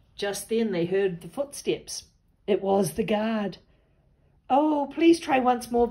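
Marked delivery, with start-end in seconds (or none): 4.5-5.9 earnest, high, raised begging voice. As the guard's footsteps approach, asking for one more magic attempt, begging. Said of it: "begged Katie".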